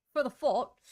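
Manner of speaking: loud Cockney accent, "thought" said as "fought". Explaining an expectation, then slipping briefly into a Cockney accent. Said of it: "slipped into some Cockney accent there".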